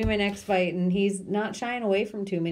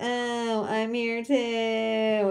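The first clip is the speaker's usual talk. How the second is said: put-on slow drunken drawl with long, stretched-out "too"; 2 semitones higher than usual. Showing the drunk girl talk from his stand-ups, do a Kevin Hart drunk girl voice. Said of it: "His drunk girl talk".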